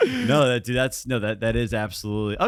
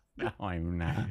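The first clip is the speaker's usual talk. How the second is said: put-on cartoon squid character voice; 7 semitones lower, 11 dB quieter than usual. Repeating the line back while joking: Squidward voice. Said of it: "Giving your dick a Squidward voice".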